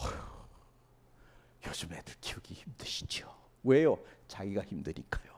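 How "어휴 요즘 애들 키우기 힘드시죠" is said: sighing, sympathetic whisper, much softer. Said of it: "같이 한숨 쉬어요".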